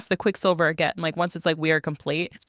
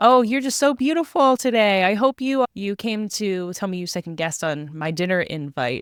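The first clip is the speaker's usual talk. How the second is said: charming, shameless, flirty sweet-talk, laid on thick; 3 semitones higher than usual. Retelling Carrion jumping up to flirt with a woman checking on Sarris: mock-flirting as Carrion. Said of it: "he's a shameless flirt".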